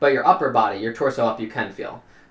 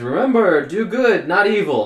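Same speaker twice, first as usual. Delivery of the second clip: slow, loud, resounding, drawn-out booming voice; 7 semitones higher, 6 dB louder than usual. Narrator voices a voice from the stonework as the players fly down a hallway, booming. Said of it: "you hear a booming voice".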